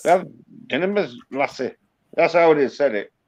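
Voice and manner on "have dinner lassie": Scottish brogue through dinner and lassie. Quoting a line from a film, the speaker says it in a Scottish accent. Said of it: "Because that's Scottish".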